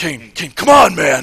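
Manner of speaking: harsh, rough, raspy half-whisper, half-shout. Retelling Randy Orton searching for Kane: imitating Randy Orton whisper-yelling. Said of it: "he's whisper yelling".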